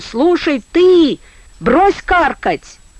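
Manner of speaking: shout with voice breaking and cracking into falsetto. Angered by another man's jeering, a character shouts into the dark: breaking falsetto shout. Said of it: "он фальцетом, срываясь, закричал".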